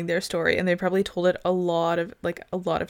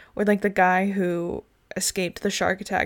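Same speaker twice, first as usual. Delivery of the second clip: usual speaking voice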